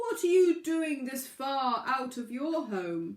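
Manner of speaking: booming, loud whale voice. Narrating a story, a whale calls to a pebble from the water: booming whale voice. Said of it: "a booming voice called out".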